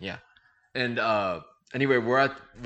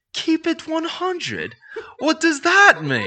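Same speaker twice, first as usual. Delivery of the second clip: put-on English accent, much higher pitch and louder; 8 dB louder than usual. Retelling David's reply to the speaker, imitating David's English accent. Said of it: "in his English accent".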